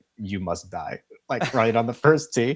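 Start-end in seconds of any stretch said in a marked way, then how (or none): 0.2-1.0 put-on Russian accent, threatening tone. Joking about a golfer speaking on the first tee: Ivan Drago voice. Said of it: "like Ivan Drago, the Russian in Rocky".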